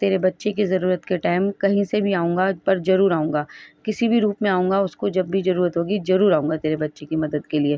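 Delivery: ordinary talk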